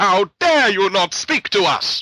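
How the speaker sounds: very loud, slow, high-pitched bellow. Acting out Luna scolding Twilight for not answering: loud Luna Camelot voice. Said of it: "the Camelot voice!".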